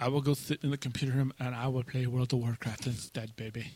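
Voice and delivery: English spoken with put-on Spanish accent. Acting out a passive-aggressive reply to a wife: spanish accent. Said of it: "With the Spanish accent".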